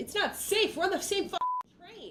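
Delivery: high, loud, exasperated yell.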